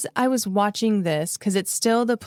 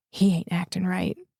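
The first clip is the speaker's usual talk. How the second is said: imitated whisper; 3 semitones lower than usual. Retelling what a neighbor told an officer: imitating a whisper. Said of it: "he just leans up and whispers".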